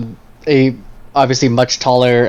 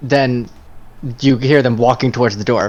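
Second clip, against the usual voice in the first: normal talking voice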